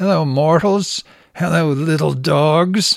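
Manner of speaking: mad scientist voice, British, drawn out. Rolling past women with their dogs, greeting them in a British mad doctor voice. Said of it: "I say in a British mad doctor's voice".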